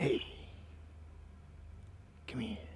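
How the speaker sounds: tiny, small, soft calling voice. Game master voicing a voice calling from the alleyway to the player: small voice. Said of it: "you hear a, a small voice".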